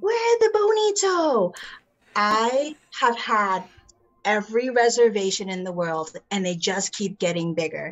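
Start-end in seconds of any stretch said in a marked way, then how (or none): 0.0-1.5 screamed out, very high-pitched. Speaker retelling what a man screamed when they came onto the ship, retelling a scream. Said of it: "he started screaming".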